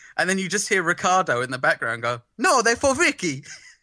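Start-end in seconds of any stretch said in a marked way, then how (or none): 2.4-3.5 pitched-up mock Italian accent. Recalling a line heard in the background: put-on Italian accent. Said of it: "in an Italian accent like I just did it".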